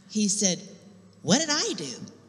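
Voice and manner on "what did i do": put-on high-pitched tone dripping with attitude. Speaker recounts the Lord speaking to the speaker while sitting there: imitating God with attitude. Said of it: "Don't think God can't talk to you with attitude".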